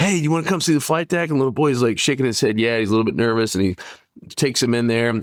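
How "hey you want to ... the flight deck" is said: put-on flight attendant voice, super pumped, pitched up. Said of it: "this flight attendant was super pumped".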